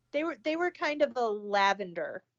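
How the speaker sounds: ordinary delivery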